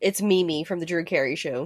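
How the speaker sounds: ordinary talk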